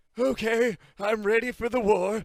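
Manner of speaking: put-on elderly man voice, high and slow. Joking about veteran players arriving with canes: made-up old man voice. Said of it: "that old man voice I just made up".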